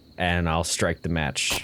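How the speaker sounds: ordinary talk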